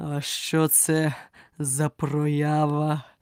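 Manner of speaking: deep, hollow, muffled tone like a great bell. A narrator reads a tired lion asking about Alice, in a deep, hollow bell-like voice. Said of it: "запитав він глухим та глибоким, як великий дзвін, голосом".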